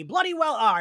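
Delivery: loud, high-pitched scream at the top of the lungs. Retelling a TV scene where Giles screams at Buffy: imitating Giles screaming. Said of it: "screams at Buffy and is like".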